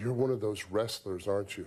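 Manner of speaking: ordinary delivery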